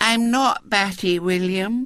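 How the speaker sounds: disarmingly meek and mild, high, slow. Violet Elizabeth replies to William, who called her batty, disarmingly meek. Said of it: "in a tone of disarming meekness".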